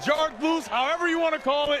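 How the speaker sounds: loud excited voice.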